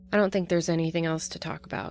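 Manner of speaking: ordinary talk, nothing marked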